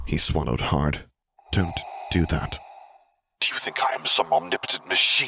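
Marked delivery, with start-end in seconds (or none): 3.4-5.3 words hissed out at a raised pitch. Narrator reading a character retorting to a pleading subordinate, hissed. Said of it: "Vader hissed".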